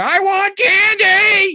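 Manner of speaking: put-on very high, loud toddler tantrum wail, "candy" drawn out. Comparing a fighter to a child dragged through a store: imitating a screaming child.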